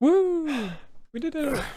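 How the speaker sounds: very slow, very high, drawn-out, swooping sing-song cheer. Voicing a character asked to sound happier after the door opens: excited, happy cheer. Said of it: "Can't you sound more happy".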